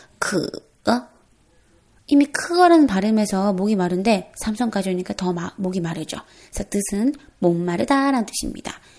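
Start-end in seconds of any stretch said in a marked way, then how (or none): 0.2-1.1 dipping third tone, falling then rising, on 크어. In a tone lesson, adding the third tone to the syllable: dipping third tone on 크어. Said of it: "크어라는 발음에 삼성을 넣어볼까요?".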